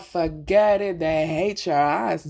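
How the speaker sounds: slow, loud, drawn-out, exasperated voice.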